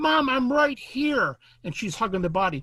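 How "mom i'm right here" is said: very high, loud, drawn-out yell. Retelling a fourteen-year-old boy yelling down from a tree to his mom, imitating a boy yelling down. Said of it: "And he's yelling down fourteen feet".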